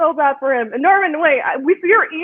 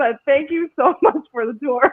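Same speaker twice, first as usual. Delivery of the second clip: giggling and laughing through the words. Thanking Norman for the tour, laughing while talking. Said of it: "That's why I'm laughing".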